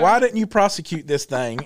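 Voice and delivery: ordinary talk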